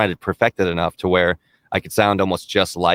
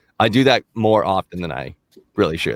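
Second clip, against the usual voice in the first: normal talking voice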